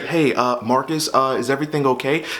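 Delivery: mock kindly, sugary, gentle concern. Retelling what a police officer said at his bedroom door, imitating a sweet tone. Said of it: "he's like saying it in a sweet tone".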